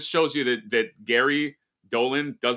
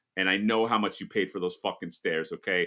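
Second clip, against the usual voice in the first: ordinary delivery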